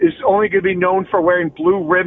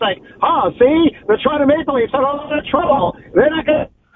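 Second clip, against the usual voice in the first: put-on old-timey 1920s voice, much higher; 8 semitones higher than usual. Podcast host discussing the Toronto Maple Leafs, offering to do a 1920s voice. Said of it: "Do you want me to do like a 1920s voice?".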